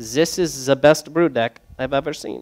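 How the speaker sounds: awful mock German accent. Retelling a brewery visit, quoting a man's praise in a bad german accent. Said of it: "That's my German impression".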